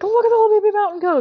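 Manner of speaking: mock panic, voice cracking. Retelling a movie scene on a bus, imitating Peter Parker panicking with his voice cracking. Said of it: "he like panics and his voice cracks".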